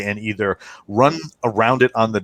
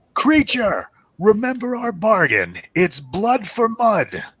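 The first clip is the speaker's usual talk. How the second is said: very high, swooping yell in character; 11 semitones higher than usual. Voicing a creature on the dock calling after fleeing players: shouting in character. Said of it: "yells out".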